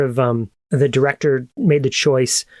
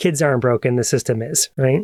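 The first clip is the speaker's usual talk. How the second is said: ordinary talk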